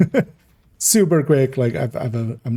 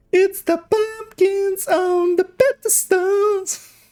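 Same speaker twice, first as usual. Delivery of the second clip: put-on very high children's tv presenter voice. Trying out a voice for a line on a video, in a kids-show host voice. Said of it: "I don't know why I went with that voice for it".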